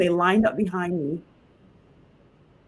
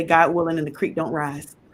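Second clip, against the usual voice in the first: plain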